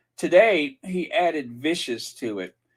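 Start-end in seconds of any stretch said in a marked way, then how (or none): none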